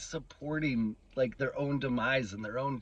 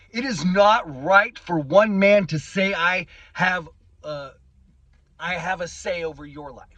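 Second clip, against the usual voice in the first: agitated, booming, loud raised voice, worked up; 5 semitones higher, 14 dB louder than usual. Mid-rant, the speaker admits to getting worked up. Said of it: "I'm getting worked up".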